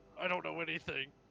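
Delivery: crying hard, ugly crying. Telling Vasher they have to go look, ugly crying. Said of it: "I'm just I'm ugly crying".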